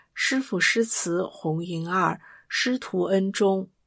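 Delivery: ordinary delivery, nothing marked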